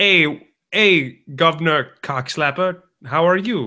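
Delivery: mock Australian accent, Cockney-sounding. Acting out how an Australian greets someone: Cockney-sounding Australian accent. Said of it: "I think that's a Cockney thing".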